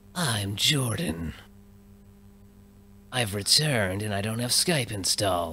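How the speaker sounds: slow, sinister, menacing cartoon-villain delivery. Doing a friend's voice for fun, imitating Jordan with sinister tone. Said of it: "a sinister tone to it, like he's Skeletor".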